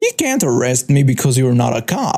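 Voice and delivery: ordinary talk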